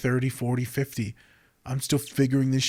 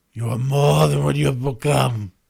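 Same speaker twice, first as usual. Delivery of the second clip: loud, rough, booming, badly done character voice; 6 dB louder than usual. Trying a line while wondering if it is from Lion King, in a terrible Mufasa voice. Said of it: "That was my Mufasa voice".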